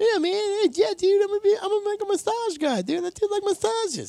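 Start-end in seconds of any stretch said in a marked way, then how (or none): 0.0-3.0 mock male voice, much higher and slower. Describing a guy the speaker calls a moron, imitating that guy's voice. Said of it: "That was his exact voice".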